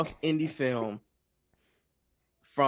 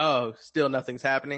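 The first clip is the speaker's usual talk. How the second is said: normal talking voice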